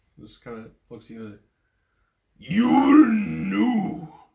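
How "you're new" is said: shrill, booming, very loud high ogre voice, "new" drawn out. Narrating a game scene, voicing an ogre who looks at a newcomer, ogre voice. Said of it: "There's so much static when you do that voice".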